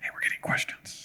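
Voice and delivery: barely voiced, hushed whisper close to the mic. Breaking in to tell the other speaker into the mic: whispering. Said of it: "I'm whispering into a mic".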